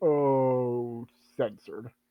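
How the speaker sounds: low grumbling mutter to oneself, drawn-out oh. Voicing a character whom the others overhear: muttering under breath. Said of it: "they hear him just mutter".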